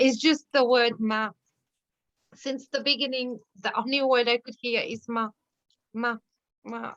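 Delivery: moved, struggling to get words out, barely composed. Talking about sessions with a partner, the speaker speaks while getting emotional. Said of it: "I'm getting emotional again".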